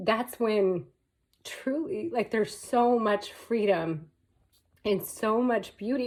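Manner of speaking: tearful, joyful crying speech. Talking about something long struggled with, crying happy tears. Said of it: "And I'm crying, but you have to know I'm crying happy tears".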